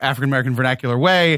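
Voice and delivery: plain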